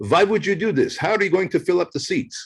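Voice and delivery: put-on heavy Russian accent. Telling of his dad's doubts about his event, the speaker imitates him in a heavy Russian accent. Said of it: "in his in his heavy Russian accent".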